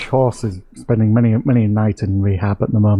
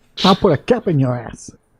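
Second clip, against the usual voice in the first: put-on menacing street-tough thug voice, pitched up; 5 semitones higher than usual. Answering how to keep people interested in the product, playing a drug dealer. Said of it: "He sounds like a drug dealer".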